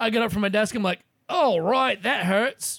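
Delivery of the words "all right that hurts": put-on very slow, drawn-out British accent. Retelling talking to yourself at work: put-on British accent. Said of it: "talking to myself out loud in a British accent".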